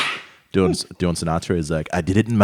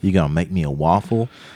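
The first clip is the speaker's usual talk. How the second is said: mock Alabama southern belle accent. Imitating a southern woman questioning a foreign man: imitating Alabama southern belle accent. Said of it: "talk like they're from Alabama".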